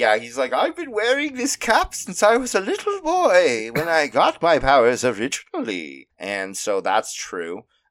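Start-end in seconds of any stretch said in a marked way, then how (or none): 0.5-6.1 put-on very high, swooping old man voice. Voicing a young villain in a made-up story: old man voice. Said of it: "he's an old man".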